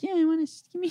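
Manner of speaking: put-on unbroken fifteen-year-old voice, very high. Retelling asking grown men for a cigarette at fifteen: imitating own high teenage voice. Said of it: "I have, like, a high voice".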